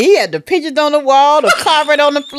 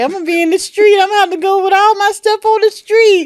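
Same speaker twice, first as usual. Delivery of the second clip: put-on high, tearful, sobbing lament; 5 semitones higher than usual. Retelling being unable to pay for the hotel: retelling own crying words. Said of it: "I'm crying like".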